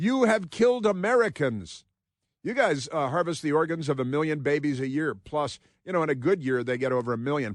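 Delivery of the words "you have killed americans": high, stretched, put-on accusing yell. Retelling how a politician answered a speech: imitating someone yelling. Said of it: "Ilhan Omar yells".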